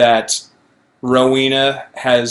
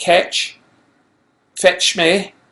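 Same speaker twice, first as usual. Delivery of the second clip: higher-pitched, rough Scottish brogue; 6 semitones higher than usual. Trying out an impression of Rowena, in a Scottish accent. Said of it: "that's close. I'll take some work".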